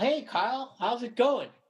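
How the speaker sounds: very high-pitched, casual delivery. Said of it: "he's like".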